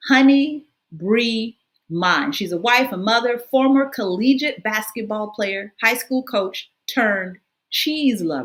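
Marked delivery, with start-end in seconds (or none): 0.1-2.3 very slow, deliberate, each word drawn out. A show host introduces a guest's business name to listeners: very slow. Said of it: "I'm going to say that really slow".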